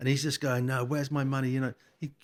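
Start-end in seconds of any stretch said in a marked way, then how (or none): 0.7-1.5 put-on, tough, gangster-like demanding voice. Retelling the other side of the phone call: imitating a gangster-like demand. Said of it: "he got a bit gangster on it".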